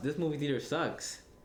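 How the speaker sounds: ordinary talk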